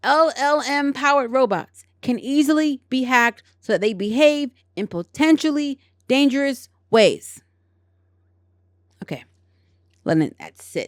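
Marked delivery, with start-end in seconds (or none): 0.0-7.4 firm restatement, projected toward the back. Rereading a fumbled sentence from an article again: louder. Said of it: "louder for those in the back".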